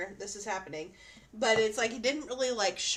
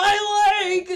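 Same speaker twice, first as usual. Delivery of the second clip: shrill, very high, loud cartoon yell; 10 semitones higher, 12 dB louder than usual. Retelling a scene from SpongeBob: imitating the yelling SpongeBob fish. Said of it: "that one fish that's yelling".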